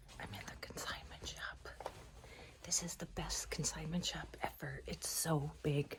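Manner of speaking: whispering, barely voiced, hushed and very quiet. Vlogging from inside a big consignment shop; whispering. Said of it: "Sorry if I'm whispering".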